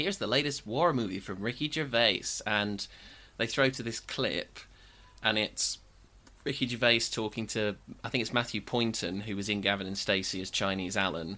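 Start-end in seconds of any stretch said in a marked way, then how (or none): 0.0-2.2 bad, put-on American accent. Retelling a sketch where a movie talk show host introduces a clip: Matt Horn's bad American accent. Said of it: "He's doing a really bad American accent".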